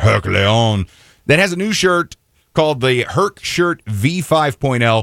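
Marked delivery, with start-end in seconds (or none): 0.0-0.9 French pronunciation, lower. Saying a company name on air in a French accent. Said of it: "I wanna say it in a French accent".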